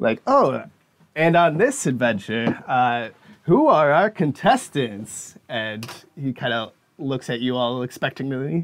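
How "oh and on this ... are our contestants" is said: swooping, showman game show host voice. Voicing a grinning host who welcomes new contestants: grinning game show host voice. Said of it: "He's like".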